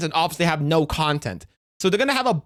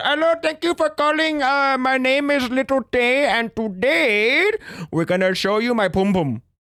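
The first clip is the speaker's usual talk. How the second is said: put-on pitched-up Indian accent, drawn-out "today"; 7 semitones higher than usual. Joking about OnlyFans, the speaker imitates an Indian man pretending to be someone else. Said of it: "talking to an Indian man pretending to be".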